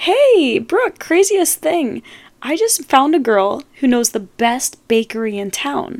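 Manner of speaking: loud, barging-in talk. Retelling what a friend said to her: imitating a friend talking loudly. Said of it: "is talking loudly to me".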